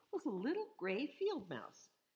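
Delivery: ordinary delivery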